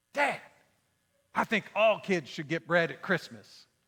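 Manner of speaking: put-on hushed, childlike stage half-whisper. Retelling a son's words on Christmas Eve: imitating a child's half-whisper. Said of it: "he whispers, like little kids whisper".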